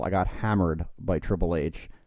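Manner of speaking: usual speaking voice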